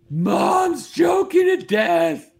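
high, slow, loud panicked yell.

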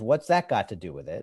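usual speaking voice

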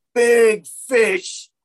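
yelled, high-pitched and loud.

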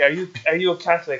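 clumsy, non-native broken English with a bad accent. Retelling a roommate's question: imitating roommate's broken English. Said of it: "I'm terrible at doing impressions".

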